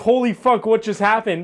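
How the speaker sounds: ordinary delivery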